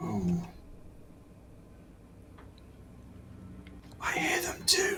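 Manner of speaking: faint, very slow, drawn-out hushed whisper. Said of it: "I don't know why I'm whispering".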